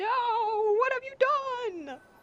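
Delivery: very high, very slow, drawn-out dramatic anime-style cry. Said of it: "It's an anime moment where he's like".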